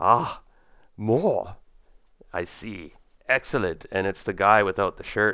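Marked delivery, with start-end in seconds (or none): 0.0-3.9 put-on German accent, very slow and deliberate. Running a game, a man speaks from behind the players in a german accent. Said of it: "that German voice again".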